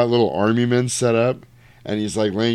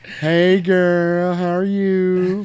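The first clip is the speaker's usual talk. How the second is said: high, slow motherly voice, "you" drawn out; 8 semitones higher than usual. Retelling greeting the girl who sat next to Ryan, in a mom from Friday voice. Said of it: "I sounded like the mom from Friday".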